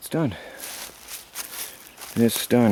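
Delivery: exhausted, not excited. Describing a finished clearing job while exhausted, not excited. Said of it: "Sorry I don't sound too excited, I'm just really exhausted".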